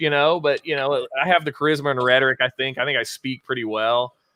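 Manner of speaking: plain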